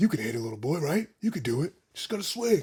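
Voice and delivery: deadpan, expressionless movie-actor delivery. Quoting a movie line the way the actor said it: imitating how an actor talked. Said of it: "That's how he was talking, though".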